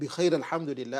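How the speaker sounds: ordinary talk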